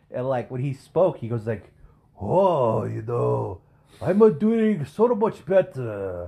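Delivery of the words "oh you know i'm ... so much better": very slow put-on Japanese accent. Imitating an elderly hospital roommate: imitating a Japanese accent. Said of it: "That's literally how he sound".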